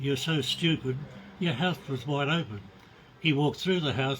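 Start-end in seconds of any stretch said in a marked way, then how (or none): none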